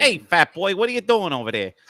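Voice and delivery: fake Brooklyn-style accent. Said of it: "can [name] do New York accent".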